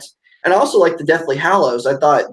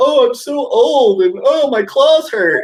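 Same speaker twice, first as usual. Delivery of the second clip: mock very high, drawn-out, complaining whine; 10 semitones higher than usual. Mocking a movie that shows Logan complaining, mock whining as Logan. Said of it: "here you have him whining and crying about".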